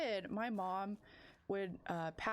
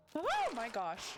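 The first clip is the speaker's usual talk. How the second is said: yelling out, higher and louder; 4 semitones higher, 4 dB louder than usual. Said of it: "I didn't mean to scream".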